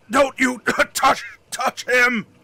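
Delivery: speaking through wet coughs. Voicing a figure at a wagon warning someone off, wet coughing fit. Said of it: "in kind of a wet coughing fit".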